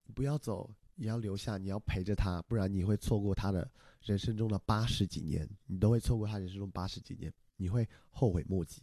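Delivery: normal talking voice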